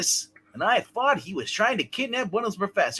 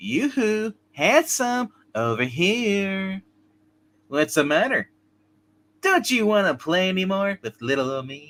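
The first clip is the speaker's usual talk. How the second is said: flirty, coy, taunting teasing voice. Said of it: "reading game dialogue in flirty taunting voice".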